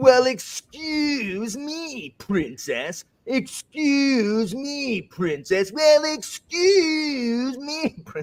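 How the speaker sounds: very high, swooping cartoon voice, drawn out. Imitating a clip from the old Zelda cartoon: imitating Link. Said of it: "one of the super clips of him just doing that".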